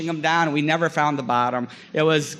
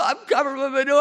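put-on crying, higher; 9 semitones higher than usual. Acting out a man being sprayed with a hose, imitating someone crying. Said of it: "He's just crying".

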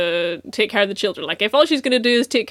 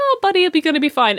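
put-on really nice, pleasant, slightly high delivery; 7 semitones higher than usual. Quoting a dubbed character's line to a listener, retelling a pleasant line. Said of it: "he says it really fucking nicely, really, like, pleasantly".

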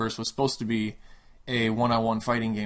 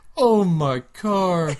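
high, loud, sobbing, crying wail; 8 semitones higher, 7 dB louder than usual. Retelling a game bonus level where a beaten guy cries: imitating a crying man. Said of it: "drops to his knees and starts crying and says".

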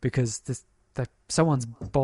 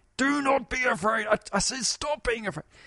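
mock stern, commanding tone, pitched very high; 11 semitones higher than usual. Re-enacting a voice yelling into a car at a little girl, imitating a commanding voice. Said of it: "very commandingly tells the little girl".

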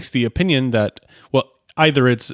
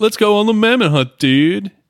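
terrible put-on California dude accent, pitched up; 8 semitones higher, 4 dB louder than usual. Describing cowboys in a comedy bit, the speaker does a bad california dude accent. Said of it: "the worst dude accent I've ever done".

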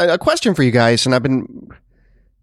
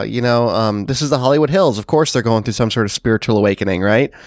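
usual speaking voice

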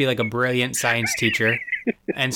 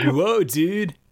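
high, dopey, dumb skater-dude voice; 5 semitones higher than usual. Recapping a scene, the speaker voices the rescued guy in a dumb skater dude voice. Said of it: "He talks like that, too. He's, like, this, yeah, like, dumb skater type dude".

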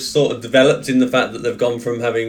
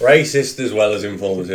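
ordinary talk, nothing marked

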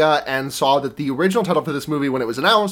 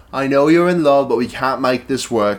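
put-on British accent; 3 semitones lower, 3 dB louder than usual. Retelling what a professor in a story says to her, british accent impression. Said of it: "My British impression".

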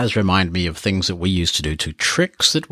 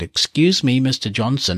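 polite, high-pitched receptionist tone; 5 semitones higher than usual. Retelling a prank tape played over the intercom, in the receptionist's voice. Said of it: "in the receptionist's voice".

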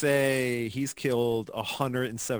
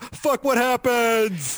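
high, slow, belted triumphant yell. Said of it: "raises it in the air and goes".

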